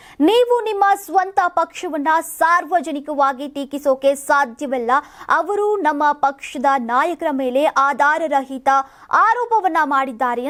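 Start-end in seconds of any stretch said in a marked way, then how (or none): none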